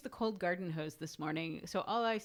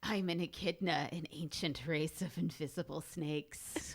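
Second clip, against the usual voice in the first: slow, hissy, serpent-like drawl; 2 semitones lower than usual. Quoting a line from Nyx about being an echidna, in hissy Nyx voice. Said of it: "Should I do the hissy voice?".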